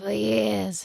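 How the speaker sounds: put-on Brooklyn cigarette smoker voice. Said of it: "was that your Brooklyn cigarette smoker voice?".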